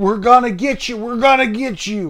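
high yell, running and chasing. Speaker retelling older boys running at them, imitating their yell. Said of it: "they were running at us yelling".

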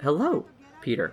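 staticky, weird, glitchy computer voice. Speaker doing the suit's AI greeting Peter, Karen AI suit voice. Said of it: "you put on the suit and this voice".

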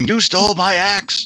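very slow, drawn-out raging scream. Suggesting how a raging character climbs the tower: yelling in character. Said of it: "yelling and shouting and screaming".

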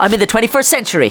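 ordinary delivery

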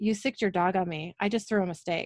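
ordinary talk

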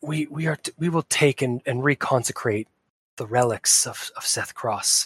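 put-on weak whisper. Voicing Sordoth as he speaks to Natalie: weak, whispery voice. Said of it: "a very weak, whispery voice".

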